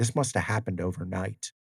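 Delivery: plain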